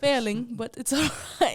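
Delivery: sudden loud fake English accent. Joking about failing the school year: put-on english accent. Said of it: "What's with the accent all of a sudden?".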